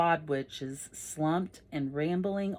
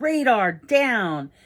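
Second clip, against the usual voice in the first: put-on old man voice, very loud, much higher, barked. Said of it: "he yells".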